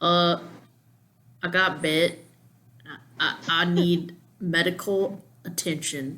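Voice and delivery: put-on slow, drawling rural German accent. Voicing a bitten character in a group story, country German accent. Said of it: "I love the country German accent".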